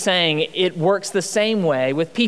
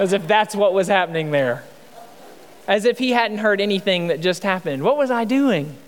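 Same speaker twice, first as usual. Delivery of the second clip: ordinary talk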